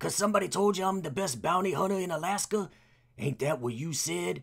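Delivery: put-on rural country accent. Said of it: "That's good".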